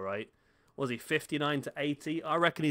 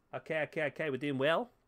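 bad, terrible put-on Australian accent; 4 dB quieter than usual. While assigning players to positions, the speaker slips into a terrible australian accent. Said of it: "That was a terrible Australian accent".

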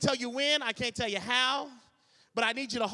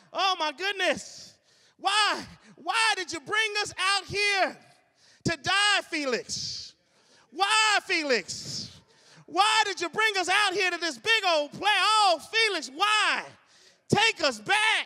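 acted, high, whiny wailing lament; 8 semitones higher, 4 dB louder than usual. Retelling how the people complained in the desert: imitating people crying out. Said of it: "crying, crying out".

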